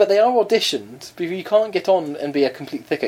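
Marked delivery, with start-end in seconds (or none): none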